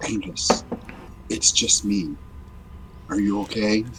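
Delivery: soft whisper in character. Voicing a character who checks on a friend: whispering in character. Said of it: "He whispers".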